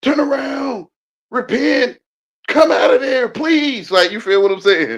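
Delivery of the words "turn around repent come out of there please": loud, high, drawn-out yelling and hollering. Speaker calling out to listeners, yelling and hollering. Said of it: "That's why I'm yelling and hollering".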